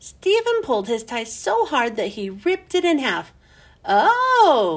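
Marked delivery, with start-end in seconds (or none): 3.8-4.8 long, drawn-out group groan on "oh". A whole class reacts as a boy rips his tie in half, groaning. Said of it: "the whole class groaned".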